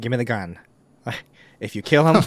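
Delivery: calm put-on actor voice. Quoting a film scene about a gun: Morgan Freeman impression. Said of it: "[name] just did a Morgan Freeman impression".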